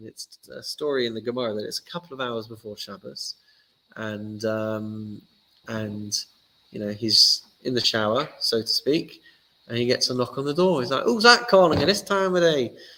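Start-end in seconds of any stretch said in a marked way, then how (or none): 11.0-12.7 put-on northern English accent, raised and high. Telling a Gemara story, voicing the sage answering a knock at the door, northern accent. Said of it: "I've always got a northern accent for these things".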